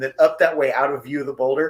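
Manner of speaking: plain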